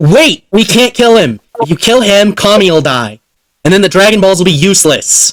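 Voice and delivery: urgent, heroic character voice. Voicing Goku stopping a player's lightning spell: Goku shouting. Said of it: "Goku shouts".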